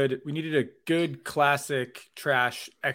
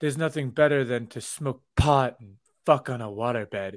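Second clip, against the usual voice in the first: put-on, vaguely Russian, foreign-sounding accent; 3 dB louder than usual. Retelling what a woman brought up unprompted, mimicking her: imitating an almost-Russian accent. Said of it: "she almost has like a Russian accent".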